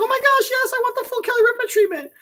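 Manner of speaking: mock giddy freak-out. Imagining an audience member answering the offer: imitating someone freaking out. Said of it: "freaking out".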